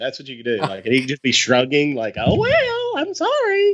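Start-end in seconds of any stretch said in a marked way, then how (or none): 2.2-3.8 very high, squeaky, slow, drawn-out cartoon-mouse voice. Imagining Bob Iger shrugging in a photo: Bob Iger voice like Mickey Mouse. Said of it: "He talks like Mickey Mouse".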